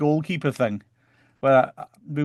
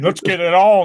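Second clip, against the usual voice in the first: loud, goofy cartoon dog voice; 4 semitones higher, 8 dB louder than usual. Retelling what a man near him at the match said, in a dog voice. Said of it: "in a dog voice".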